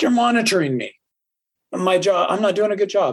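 play-acted upset, aggrieved. Retelling what she said in a different tone, mock-frustrated tone. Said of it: "and gets very frustrated about it".

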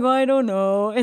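glum, gloomy, downcast cartoon donkey-character voice. An author asked about the book's themes answers, Eeyore voice. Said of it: "I transition to Eeyore voice".

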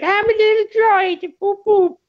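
mock cartoon character voice. Pitching a voice for a little droid, doing a Whitey voice. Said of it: "did the voice of Whitey from 8 Crazy Nights".

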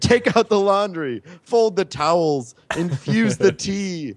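dramatic, high screaming, stretched out slowly. Retelling game commands players shout: imitating someone screaming. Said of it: "someone's screaming".

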